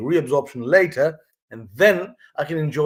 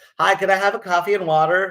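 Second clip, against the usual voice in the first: higher-pitched put-on American accent; 5 semitones higher than usual. Retelling a campaign where people ordered in a restaurant, in a put-on American accent. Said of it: "my American accent is brilliant".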